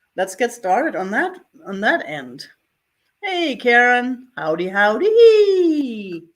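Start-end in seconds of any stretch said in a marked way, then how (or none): 3.3-6.2 put-on loud old-lady voice, howdy drawn out long. Greeting Karen with a drawn-out hello: Minnie Pearl voice. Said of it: "I sound like the old lady from the, from that T V show, Minnie Pearl".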